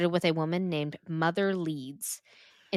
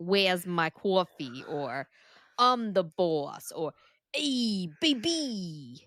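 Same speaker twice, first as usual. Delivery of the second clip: New Jersey accent, local street talk. Imagining how the Jersey Devil would scream, New Jersey accent. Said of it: "In a New Jersey accent".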